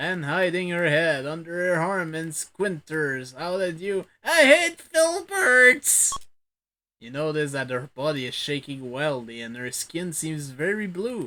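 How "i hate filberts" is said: wild cackle, very high and very loud. Narrating a story game, the speaker voices a suspicious woman, cackling in a high voice. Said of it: "cackling in a high voice".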